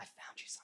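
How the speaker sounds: very quiet, hushed whisper, barely there. Retelling a hunting trip, imitating Dad whispering that he found something. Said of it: "he whispers".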